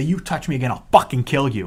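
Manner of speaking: angry voice. Retelling a threat made to a fan who pulled them down: imitating own angry threat. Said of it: "I was so angry".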